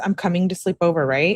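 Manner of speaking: plain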